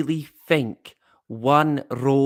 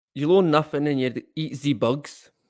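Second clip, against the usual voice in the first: English spoken in a mock German accent. Discussing the Doomsday Clock, mocking a man they call evil: Klaus Schwab accent. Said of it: "That's my Klaus Schwab accent".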